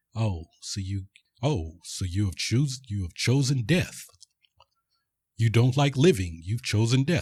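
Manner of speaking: put-on tone turning suddenly serious. Retelling a scene where men pull weapons on him: imitating a suddenly serious tone. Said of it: "gets all serious all of a sudden".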